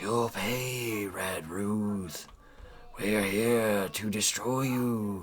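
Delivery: eerie, ghostly, very slow half-whisper, "pay" drawn out. Voicing presences that threaten Red Ruth in the wind: half-whispering in the wind. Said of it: "you believe you hear whispering in the wind".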